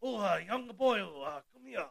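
put-on Japanese accent. Imitating a Japanese wrestler calling someone young boy: put-on Japanese accent. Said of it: "The Japanese".

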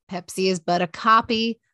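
ordinary talk, nothing marked

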